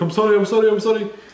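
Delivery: high, loud mock Indian accent.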